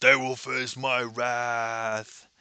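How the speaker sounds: put-on voice as if mouth full of food. Retelling a scene, acting out Zoe as she speaks with her mouth full of food. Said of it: "Zoe has a mouthful of food and she's like".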